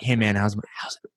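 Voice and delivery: put-on whisper. Imitating the other speaker's late-night message to him: imitating someone whispering. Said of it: "in the whispering voice".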